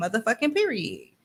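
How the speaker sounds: ordinary talk, nothing marked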